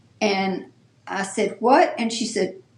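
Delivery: plain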